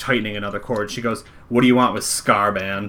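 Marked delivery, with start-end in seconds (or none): 1.5-2.9 disdainful, slower. Game narrator voices a woman outside the tent questioning the players: disdainful. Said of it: "She said that with some like disdain in her voice".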